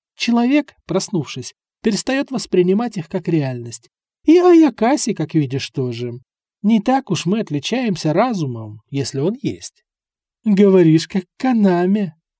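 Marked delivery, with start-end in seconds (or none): 10.4-12.1 mocking, teasing tone. A narrator reads the snake's reply to the bloodsucker, mocking. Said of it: "насмешливо прищурилась змея".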